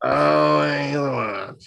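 slow, drawn-out impression voice. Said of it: "turned into Roz from Monsters, Inc".

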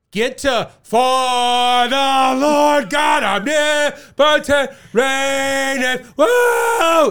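shrill, very high, loud rowdy shout, For drawn out. Retelling a heckle at a composer's concert; imitating an audience member shouting. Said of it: "And shouted one audience member".

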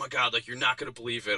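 mock angry, riled-up, worked-up voice. Retelling a phone call from a friend on the drive back: imitating Mike, pissed off. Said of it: "you could just hear it in his voice. He's pissed".

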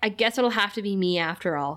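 ordinary delivery

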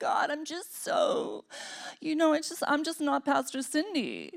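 slow, hushed, breathy, self-pitying put-on whisper. Mocking a believer who prays with fake humility: mock self-pitying prayer. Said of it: "I'm being facetious".

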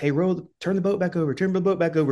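high, light, mock hollered yell. Retelling rowing a boat back to the dock, imitating guys yelling at them. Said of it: "these guys like yelling at us".

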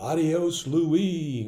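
big, booming, high-pitched acted voice. Recalling what a guy would go every time, imitating a booming voice. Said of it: "this guy had this booming voice".

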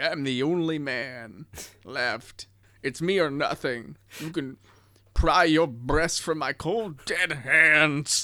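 put-on slow old man voice proclamation. Retelling a movie scene where Charlton Heston walks in: geriatric Charlton Heston impression. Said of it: "Charlton Heston walks in like a geriatric".

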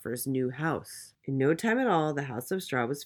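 ordinary delivery

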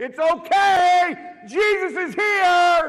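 very loud, very high, slow, drawn-out holler. Retelling waking up on morphine and calling out: retelling a loud yell. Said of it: "I'm yelling as loud as I can".

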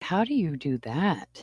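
bemused, confused delivery. Retelling how people react when told the speaker makes soap, mock-bemused voice. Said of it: "In this very bemused voice".

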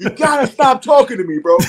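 very high, piercing shout. Recounting yelling from inside a trailer at a man outside, retelling a yell. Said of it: "I'm yelling at him".

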